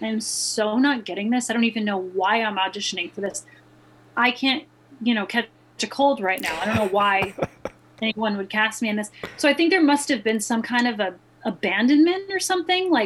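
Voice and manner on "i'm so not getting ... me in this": ordinary talk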